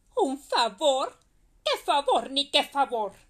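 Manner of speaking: loud, booming, cruel, wicked woman's yell. A cruel woman answers the neighbor she just kicked; shouting. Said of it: "Gritó la malvada".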